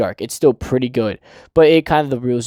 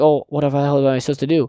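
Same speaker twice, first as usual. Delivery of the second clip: put-on panicked voice. Retelling how a character reacts to a ruined plan: imitating someone panicking. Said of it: "And he starts panicking".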